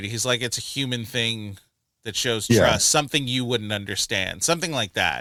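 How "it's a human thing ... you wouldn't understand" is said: plain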